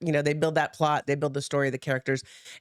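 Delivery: ordinary delivery, nothing marked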